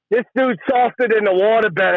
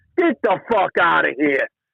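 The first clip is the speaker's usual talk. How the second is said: usual speaking voice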